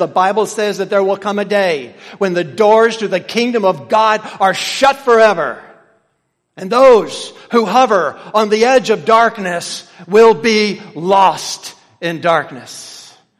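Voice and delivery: loud, booming, ringing, proclaiming tone. Retelling what a man called out in Creole at the doors, in a loud voice. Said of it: "in the loud voice".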